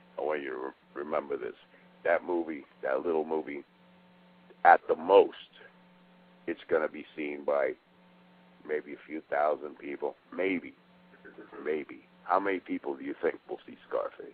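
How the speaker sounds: very deep, soft put-on bass voice. Retell what he said about scarface and a little movie, imitating his really deep voice. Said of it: "he's got a really deep voice. He goes".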